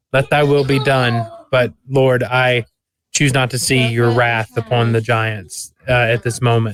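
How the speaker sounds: normal talking voice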